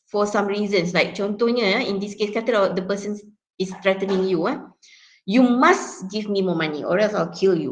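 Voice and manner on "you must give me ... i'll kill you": must said with strong heavy stress. Example of a person threatening you, strong stress on must. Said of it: "if you put emphasis on that particular word".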